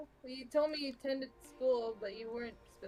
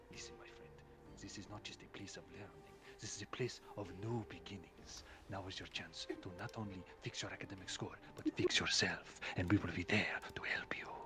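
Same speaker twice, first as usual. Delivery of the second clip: put-on cartoon cat voice, lower and quieter; 6 dB quieter than usual. Voicing Stu, hand on Xeric's shoulder, encouraging him: Puss in Boots voice. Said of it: "Why do you sound like the cat from Shrek?".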